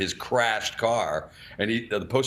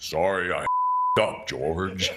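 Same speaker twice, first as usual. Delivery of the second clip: very slow and grand delivery; 3 semitones lower than usual. Retelling an apology after a botched newscast intro: booming Cronkite voice. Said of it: "this beautiful booming voice of his".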